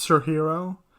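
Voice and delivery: ordinary delivery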